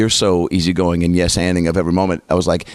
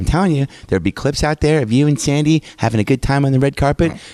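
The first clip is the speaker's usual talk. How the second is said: sweet little Oklahoma mom voice, pitched up; 6 semitones higher than usual. Retell your mom giving you crap about the red carpet to this day, imitating her voice. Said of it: "doing the voice".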